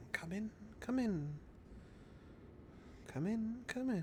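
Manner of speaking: very quiet, high, faint whisper, as if windborne. Voicing a call heard on the wind luring a character: whispering on the wind. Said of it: "you hear this sort of whispering on the wind".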